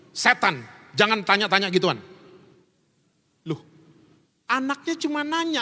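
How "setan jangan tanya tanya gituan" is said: ordinary talk, nothing marked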